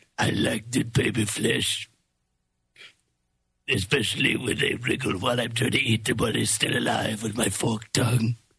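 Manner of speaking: scary, creepy, menacing reptile creature voice. Playing a baby-eating reptile in a joke exchange, scary reptile voice. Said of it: "He got a really scary voice".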